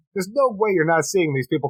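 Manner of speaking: ordinary delivery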